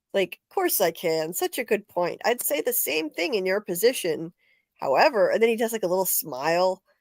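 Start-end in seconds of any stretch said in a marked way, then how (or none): 0.5-5.3 condescending, patronizing, falsely agreeable, talking down. Retelling Mark's recorded message to his other self: imitating Mark, condescending. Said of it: "that sounds so condescending".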